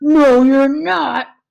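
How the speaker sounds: rough, loud, growling storybook troll voice. Narrator reads the troll's reply to the goat on the bridge, growling troll voice. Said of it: "growled the troll".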